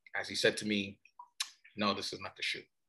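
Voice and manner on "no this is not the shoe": imitated disappointed voice, lower and quieter. Retelling the dad's reply about the first shoe prototype: imitating a disappointed voice. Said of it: "I can hear the disappointment in his voice".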